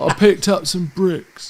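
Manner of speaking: casual, put-on Somerset-style West Country accent. Trying a West Country accent when asked to: Rich Payne impression. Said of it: "That's Rich Payne".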